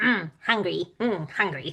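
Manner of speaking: goofy, low, silly little gremlin creature voice. Speaker recounts how the creature's voice turned silly as it spoke: silly gremlin voice. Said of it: "to this like really silly sounding voice".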